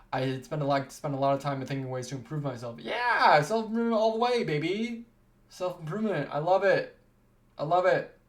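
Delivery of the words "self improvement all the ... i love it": pitched-up, sarcastic cheerleading tone. Speaking about themselves in a conversation, the speaker sounds very sarcastic. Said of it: "that sounded very sarcastic".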